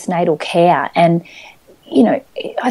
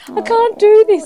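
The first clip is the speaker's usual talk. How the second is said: mock very high, tearful crying. Retelling phoning mum after coming home from hospital: imitating own past crying. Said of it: "on the phone in tears going".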